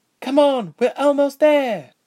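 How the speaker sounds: very high exclamation. A stranger calls back to Ilse, who has collapsed in the snow, exclaiming. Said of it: "the stranger exclaimed".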